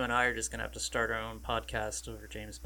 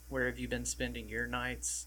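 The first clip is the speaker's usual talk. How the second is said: usual speaking voice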